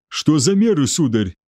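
usual speaking voice

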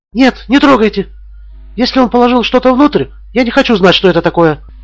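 hysterical exclamation, very high-pitched. A woman stops a man from touching it; hysterical exclamation. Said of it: "истерично воскликнула Мала".

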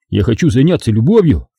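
ordinary delivery

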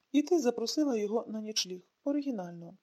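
ordinary delivery

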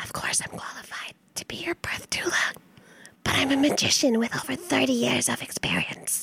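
breathy, whispered creature voice. Reading a card aloud in a party game: Gollum voice. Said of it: "Gollum. Gollum".

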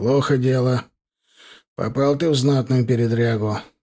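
ordinary talk

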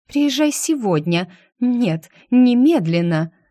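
loud, high-pitched, pressing, insistent. A woman presses Genrikh after he says he can't come sooner, insisting. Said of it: "она настаивала".

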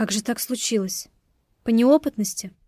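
plain reading voice

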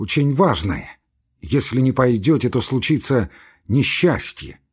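ordinary delivery

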